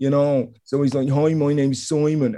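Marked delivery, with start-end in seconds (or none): 1.1-2.3 put-on strong, genuine, non-comedic male Dublin accent. Describing a man who suddenly went full Irish, Simon's comedy Dublin accent. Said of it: "like a deep Dublin accent".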